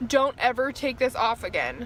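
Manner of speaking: normal talking voice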